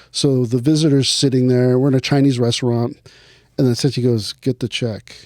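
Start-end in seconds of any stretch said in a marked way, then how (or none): 4.3-5.1 under-the-breath mutter, quieter. Retelling what Sensei said at a restaurant with a visitor, muttered under his breath. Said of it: "Real under under his un".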